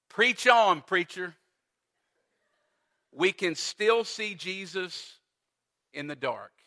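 ordinary talk

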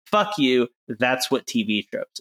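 ordinary delivery

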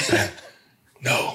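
soft whispering. Retelling what a man whispered to him after he called a play; retelling a whisper. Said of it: "he like whispered to me".

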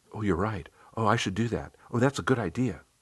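quick, agreeable muttering under the breath. Playing a compliant role, the narrator takes notes in the conference room, retelling own muttering. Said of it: "all the while muttering".

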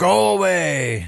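high, slow, bad put-on Russian accent. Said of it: "my really bad impersonation of Gronin".

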